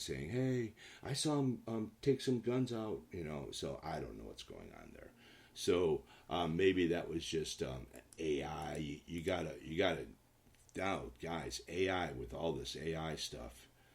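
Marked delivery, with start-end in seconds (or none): 0.3-3.0 loud, high-pitched yelling. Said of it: "was yelling".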